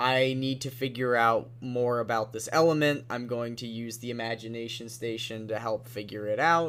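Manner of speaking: ordinary talk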